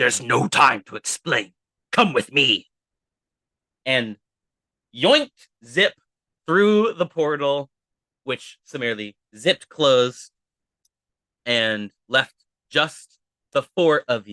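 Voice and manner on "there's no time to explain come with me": low, rough, deep, gravelly figure voice. Narrating, a masked, cloaked figure pulls Zip up and speaks: deep, gravelly voice. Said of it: "said in a deep, gravelly voice".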